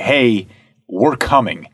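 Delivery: menacing, ominous, slow and drawn-out. Retelling how the police advanced on protesters: imitating an ominous, slow warning. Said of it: "a very ominous, slow".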